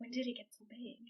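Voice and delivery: hushed, barely audible, very soft half-whisper. Retelling a sister's reply about a shadow figure: imitating the sister's half-whisper. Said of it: "she whispers back".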